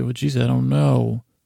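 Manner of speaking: ordinary delivery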